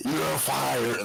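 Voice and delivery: scary, menacing, ominous delivery. Showing how Vince does his line: scary Vince McMahon impression. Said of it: "I saw how Vince does it".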